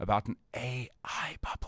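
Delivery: slow, hushed whisper under the breath. Voicing a concern in conversation, whispered. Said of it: "I'm going to whisper this".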